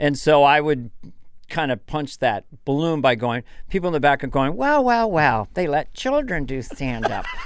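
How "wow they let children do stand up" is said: patronizing tone with stretched, drawn-out wow. A stand-up comic voices the crowd's reaction to how young he looks, mimicking a condescending voice. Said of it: "the initial condescending voice".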